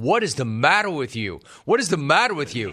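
plain

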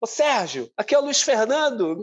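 put-on Rio de Janeiro accent. Recalling the phone call about his first call-up, in Luiz Fernando's carioca accent. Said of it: "aquele sotaque carioca".

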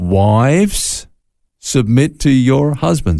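slow, deliberate, careful reading aloud.

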